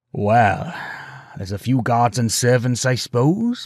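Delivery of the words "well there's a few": ordinary delivery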